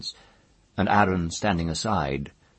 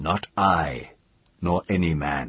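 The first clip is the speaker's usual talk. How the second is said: usual speaking voice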